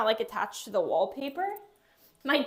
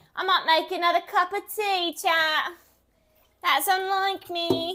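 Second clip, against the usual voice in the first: high, yelling, shouting voice; 7 semitones higher, 4 dB louder than usual. A streamer chatting with viewers from their apartment, yelling. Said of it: "I'm yelling like you can't hear me".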